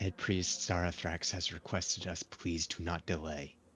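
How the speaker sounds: hushed, quiet, soft-spoken, discreet delivery. Player in a roleplaying game speaks in character, quietly. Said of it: "And I say quietly".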